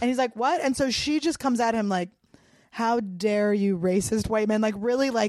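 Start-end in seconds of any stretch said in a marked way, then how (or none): 2.7-4.6 mock-angry accusing outburst, slower pace. Retelling a woman lashing out at Kurt, imitating a mad outburst. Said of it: "gets really mad".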